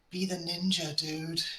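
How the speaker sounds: close whisper. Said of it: "I'm just gonna whisper in his ear".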